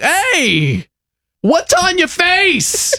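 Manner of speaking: put-on high, slow, baffled voice, like a puzzled kid.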